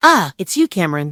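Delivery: pleased, glad, satisfied, pitched a touch high. Answering a phone call and recognizing the caller, pleased.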